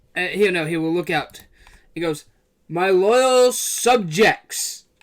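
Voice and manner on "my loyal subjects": big, carrying, booming voice. Describing a scene where he addresses the crowd from atop: booming voice. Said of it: "you hear a booming voice from atop".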